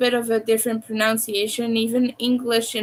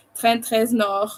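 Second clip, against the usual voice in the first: put-on French accent, French pronunciation. Showing how people in france pronounce it: french accent on trent reznor. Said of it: "you should hear how people pronounce it in in France because they, they they say like".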